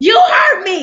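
mock indignant accusing burst. Retelling how a partner kept accusing them and refusing to explain. Imitating an angry outburst. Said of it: "very calmly".

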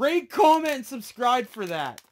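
overexcited voice. Video host celebrating a catch, addressing viewers: excited. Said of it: "I need to calm down a little bit".

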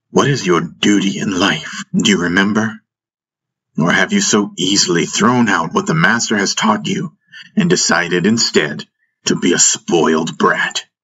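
ordinary delivery

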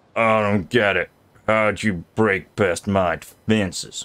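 put-on drawling American accent. Voicing one of the characters the speaker plays, in an american drawl. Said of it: "I gave this one an American drawl".

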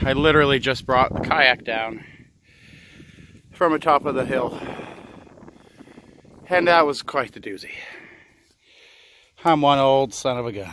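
heavy breathing, out of breath. Host welcoming viewers back after carrying a kayak down a hill, out of breath. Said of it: "I apologize for the heavy breathing".

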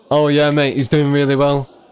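sarcastic, mocking tone meaning the opposite. Streamer telling chat how they'd answer a post-game question, sarcastic. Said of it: "That's sarcasm, by the way, chat".

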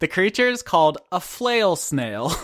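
words fighting off a giggle, suppressed laugh. Describing a summoned creature to the other players, trying not to laugh. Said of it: "I'm trying not to laugh while I say this".

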